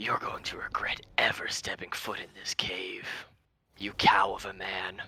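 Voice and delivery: booming, overarching large dragon voice. Voicing the large dragon threatening the party after its baby dies: booming voice of the large dragon. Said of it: "the voice overarching from the large dragon says".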